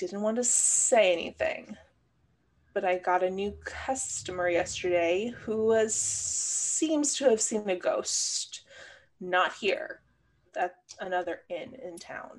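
confiding, leaning-in stage whisper. As the innkeeper, pulling you aside from the other patrons at the bar, whispering. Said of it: "and whispers".

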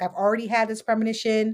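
ordinary delivery

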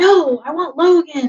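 put-on very slow, drawn-out, loud, high-pitched scream. Speaker recalls feeling surrounded by people trying to hug them, retelling their own scream. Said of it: "standing up and screaming".

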